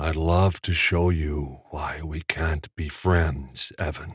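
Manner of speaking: slow, rumbling, drawn-out voice. Narrating a story, voice a character speaking to Evan in a slow, rumbling voice. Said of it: "said in a slow, rumbling voice".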